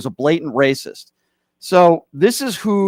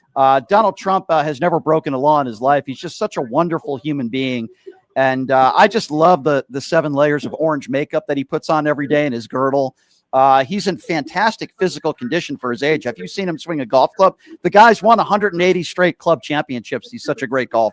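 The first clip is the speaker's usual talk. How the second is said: ordinary talk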